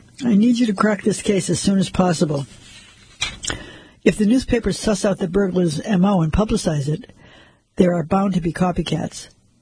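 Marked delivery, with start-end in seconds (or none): none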